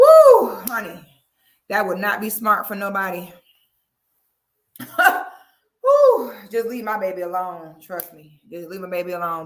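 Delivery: loud, agitated, worked-up, with swooping pitch. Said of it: "my heart is beating so fast".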